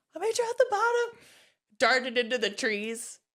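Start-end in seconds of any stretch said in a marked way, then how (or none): 0.2-1.2 high-pitched hollered shout. Retelling shouting to mom while skiing as a child: imitating own past shout. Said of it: "shouted at her".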